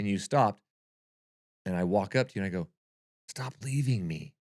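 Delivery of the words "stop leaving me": mad, fed-up, annoyed complaining, raised pitch. Retelling walking up to the partner who kept leaving, imitating own angry voice. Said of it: "I got so mad at you".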